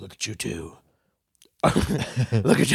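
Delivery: grim, dark, brooding superhero voice. Speaker imagines a guy jumping into the second deck, calling out: Batman voice. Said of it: "said it all like Batman".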